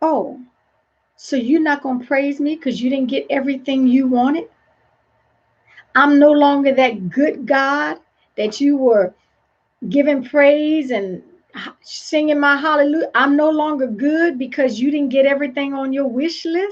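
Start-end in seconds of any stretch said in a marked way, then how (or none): none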